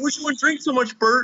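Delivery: very high-pitched nagging voice. Retelling a cartoon scene where Ernie scolds Bert in bed: imitating Ernie nagging. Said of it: "kinda nagging".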